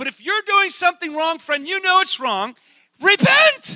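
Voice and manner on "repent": weird, sudden, very high, loud voice. Urging listeners who know they are doing wrong: weird expression in the voice. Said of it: "weird kind of expression just came over my voice".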